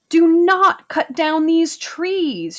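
very high-pitched outcry. A narrator reads Amrita's line to the axeman swinging at her tree, crying out. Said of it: "she cried".

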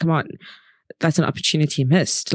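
normal talking voice

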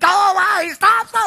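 high, drawn-out screaming. Retelling things popping up faster than the speaker could stop them, re-enacting screaming at pop-ups. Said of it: "I'm like screaming at the thing".

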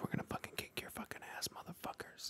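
very quiet, close-to-the-mic ASMR whisper. Joking with teammates during a match about ASMR: ASMR whisper. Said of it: "we get into the A S M R space".

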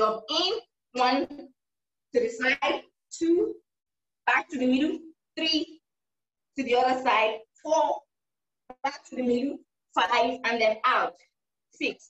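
slow, drawn-out, step-by-step demonstrating pace.

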